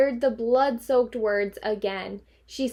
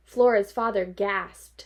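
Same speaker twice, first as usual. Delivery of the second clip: ordinary delivery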